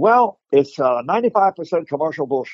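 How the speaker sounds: gently done voice with a slight speech impediment. Retelling what Bruce said about martial arts in Hong Kong: imitation of Bruce with speech impediment. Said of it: "I've got my little imitation of Bruce".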